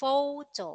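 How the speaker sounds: photo with first syllable pho stressed. Contrasting with photography: stress on first syllable of photo. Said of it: "the stress is in pho".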